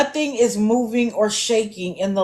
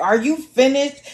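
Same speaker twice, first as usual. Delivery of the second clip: mock-irritated, annoyed yell; 4 semitones higher than usual. Retelling how she yelled out to Fish Sticks after being interrupted: mock-annoyed yell. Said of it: "She yells out to Fish Sticks".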